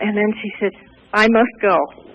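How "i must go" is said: put-on flat monotone with no inflection. Retelling the acquaintance leaving abruptly: imitating Rachel's real monotone. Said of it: "she spoke in a real monotone".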